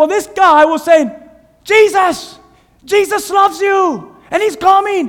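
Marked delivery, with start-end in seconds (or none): 1.6-5.1 play-acted high, drawn-out screaming. Retelling a kid shouting at passing cars: imitating someone screaming. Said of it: "And he was screaming".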